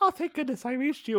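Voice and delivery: tiny little high voice, hurried. Retelling the first voice heard on the line, in a little high-pitched voice. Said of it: "You hear a little high pitched voice being like".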